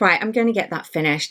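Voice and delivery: ordinary talk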